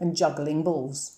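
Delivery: plain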